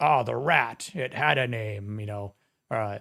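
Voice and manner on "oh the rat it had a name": put-on villain voice, taunting tone. Retelling how Shredder taunts Leo: imitating Shredder taunting. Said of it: "Shredder's just, like, taunting him".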